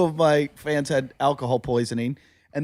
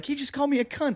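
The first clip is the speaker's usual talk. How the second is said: acted-out very high, shrill screaming and yelling; 10 semitones higher, 6 dB quieter than usual. Retelling a woman complaining to security about a man in line, imitating her yelling and screaming. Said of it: "she's yelling and screaming".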